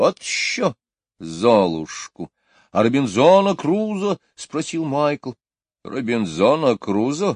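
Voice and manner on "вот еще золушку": contemptuous, scornful, slower. Asked by the children whether she saw Cinderella, she answers contemptuously. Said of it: "презрительно сказала Мэри Поппинс".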